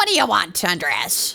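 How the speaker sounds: witch-like put-on character voice. Voicing a female character who addresses andres, in a witchy voice. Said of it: "Maybe I'm giving her a witchy voice".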